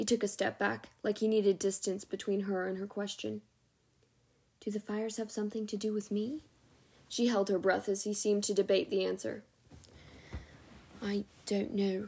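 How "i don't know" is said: whispered, much slower. A man answers a woman's question after debating the answer: whispered. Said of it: "he whispered".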